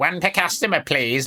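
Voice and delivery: insufferable, priggish, high nerdy voice. Quoting the brother handing out candy: insufferable Dylan voice. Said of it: "like an insufferable, uh, dick".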